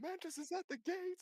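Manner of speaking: very high-pitched, very loud alarm yell. Describing a city guard raising the alarm: yelling an alarm. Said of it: "You hear somebody yell".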